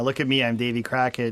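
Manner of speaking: ordinary delivery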